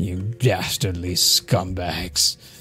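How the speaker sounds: low, disgusted, revolted character voice. Voicing a prisoner covering his nose at a stink: disgusted prisoner voice. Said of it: "puts his shirt over his nose and says".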